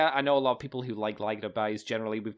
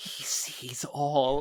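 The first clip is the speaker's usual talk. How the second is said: close put-on whisper, as if right into an ear; 2 semitones higher than usual. Acting out a joke scenario of leaning into a partner's ear: pretend whisper. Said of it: "and you just whisper".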